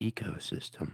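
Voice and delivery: whispered, breathy put-on public-radio announcer voice. Repeating a word in an NPR voice for the other speaker: NPR voice. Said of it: "let me say it in an N P R voice".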